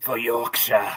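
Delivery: TV advert tagline announcer voice. Doing a requested impression line from a tea advert: Sean Bean voice. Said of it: "something to say in a Sean Bean voice".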